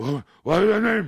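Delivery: put-on gruff voice.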